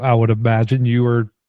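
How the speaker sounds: ordinary delivery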